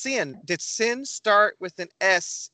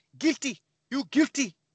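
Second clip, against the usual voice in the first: higher-pitched Haitian accent; 6 semitones higher than usual. Showing how a word sounds in different accents, Haitian accent. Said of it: "in Haitian".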